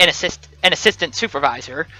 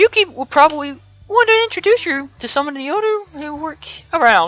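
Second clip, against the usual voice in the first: very high voice cracking all over; 9 semitones higher than usual. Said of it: "my voice is cracking all over the place".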